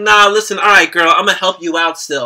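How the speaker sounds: ordinary delivery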